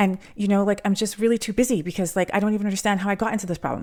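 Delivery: frantic, fast, high, rattled-off rush. Describing being too busy and lost in a problem: fast, frantic, high-pitched. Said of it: "Do you see how fast my intonation went? ... It was high pitched".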